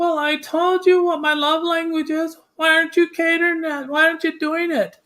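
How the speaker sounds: very high-pitched, acted-out little whining voice. Speaker acts out what someone might say, imitating a little whiny voice. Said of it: "have that little whiny voice".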